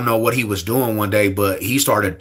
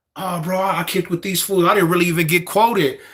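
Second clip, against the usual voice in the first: put-on nervous stammer, higher pitch; 7 semitones higher than usual. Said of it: "And he started stuttering".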